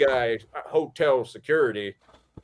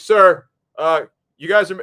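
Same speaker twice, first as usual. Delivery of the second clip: put-on curt guard voice, higher and louder; 6 semitones higher, 9 dB louder than usual. Retelling a hotel security guard at the door: imitating security guard with attitude. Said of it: "started almost with a little attitude".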